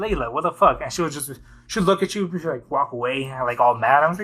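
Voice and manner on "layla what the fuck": plain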